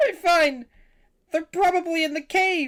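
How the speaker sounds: tearful sobbing speech. Game master voicing a bandit answering the players' question, speaking in tears. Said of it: "you see him just in tears".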